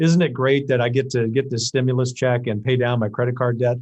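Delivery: ordinary talk, nothing marked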